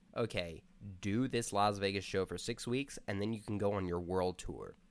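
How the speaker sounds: ordinary delivery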